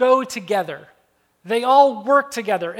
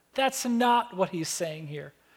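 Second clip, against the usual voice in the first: plain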